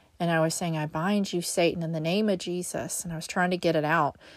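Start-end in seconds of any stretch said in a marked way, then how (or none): none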